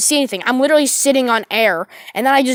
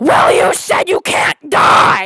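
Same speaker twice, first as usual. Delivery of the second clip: loud scream at the top of the lungs; 3 semitones higher, 5 dB louder than usual. Retelling an argument, the speaker acts out the other man's reply: retelling a scream. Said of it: "screams at the top of his lungs".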